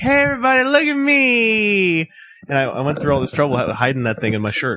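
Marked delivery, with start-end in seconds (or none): 0.0-2.1 high, loud, drawn-out showy attention-seeking call. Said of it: "I didn't wanna be all like".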